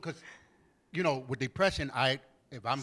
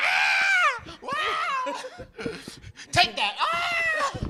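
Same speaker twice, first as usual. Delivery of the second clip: play-acted shrieks, very high, very slow and drawn-out; 6 dB louder than usual. Retelling being flipped around, imitating a scream. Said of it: "I be screaming like a bee".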